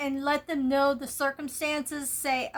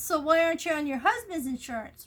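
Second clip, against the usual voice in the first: very cocky, tossed-off, thrown-out-there tone; 2 semitones higher than usual. Retelling an insurance agent's question about a husband's insurance: imitating a cocky tone. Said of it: "Real cocky like".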